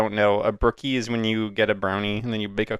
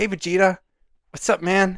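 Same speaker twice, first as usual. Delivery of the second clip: pitched-up, easy, casual put-on voice; 9 semitones higher than usual. Doing a Goku and Vegeta roleplay as asked: Goku voice. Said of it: "Goku be like".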